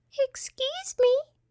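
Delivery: small, tiny, very high-pitched little voice. Reading a story where a voice from below speaks up, in a high-pitched little voice. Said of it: "said a high-pitched little voice".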